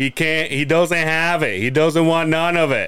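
usual speaking voice

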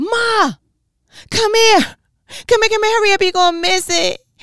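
put-on top-of-the-lungs shrill child scream, very high and loud. Recalling calling their mother as a child to see a commercial, retelling a childhood scream. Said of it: "I would have to scream at the top of my lungs".

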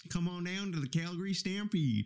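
practiced fake Canadian accent. Asked whether he practiced his accent, trying it out: put-on Canadian accent. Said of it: "Better than the first time".

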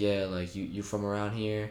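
ordinary talk, nothing marked

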